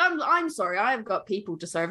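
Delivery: plain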